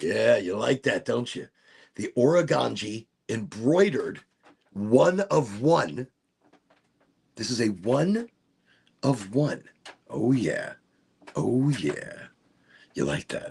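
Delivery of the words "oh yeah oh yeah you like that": nice deep put-on voice in bass register. Showing off a one-of-one embroidered piece to viewers, nice deep voice. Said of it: "I get a nice deep voice for it".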